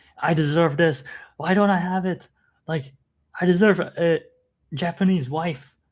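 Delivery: high, loud, mock unhinged screaming rant. Retelling a video of someone who wanted to collab: imitating someone screaming. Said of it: "started screaming and yelling".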